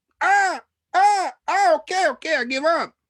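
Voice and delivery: high, loud, pained yelps.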